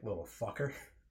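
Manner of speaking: muttering under breath. Retelling what a teacher said after handing back a paper: imitating muttering under breath. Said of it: "I heard her say under her breath".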